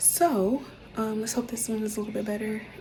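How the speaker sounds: soft, hushed whisper. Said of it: "I'm whispering because Soul is asleep".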